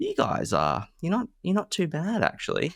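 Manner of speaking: put-on very high, slow, swooping amazed tone. Thanking listeners, imitating people who approached in pubs, in a mock-surprised tone. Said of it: "in a really surprised tone said".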